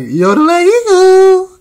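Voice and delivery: over-the-top, very high, swooping Canadian accent. Showing how Canadian accents sound: mocking a Canadian accent. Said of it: "Canada accents are funny. Sound like".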